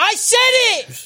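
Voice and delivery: very high-pitched, loud yelling shout. Insisting to the others that they said it first: loud. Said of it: "you're so loud".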